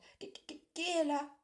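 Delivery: tiny, very high, stammering, stuttering voice. Narrator reading Porcinet peeking out his door at a knock: tiny stammering voice. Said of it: "bégait-il d'une toute petite voix".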